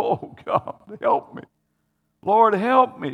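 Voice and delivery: play-acted, desperate, high, drawn-out pleading cry. Retelling how a woman cried out to Jesus for help; imitating a desperate plea. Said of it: "She's pleading".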